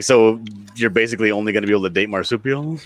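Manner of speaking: ordinary delivery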